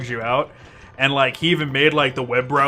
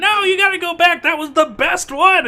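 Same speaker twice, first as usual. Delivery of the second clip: fake old lady voice, pitched way up. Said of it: "pretending to be an old lady".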